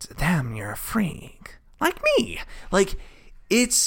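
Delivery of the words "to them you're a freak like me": comic-book villain voice, pitch swinging all over. Doing the character's lines, in a Joker voice. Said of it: "I'm going to do the voice".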